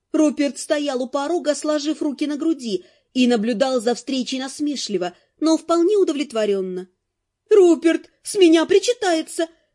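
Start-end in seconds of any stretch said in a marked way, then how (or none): 7.5-9.5 eager, worked-up, excited, high-pitched voice. Narrator reads Net addressing her husband Rupert: excited declaration. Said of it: "в ажиотаже заявила Нет".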